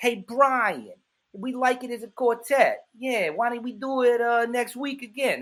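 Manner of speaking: put-on New Orleans Yat accent. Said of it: "they talk like they're from Brooklyn".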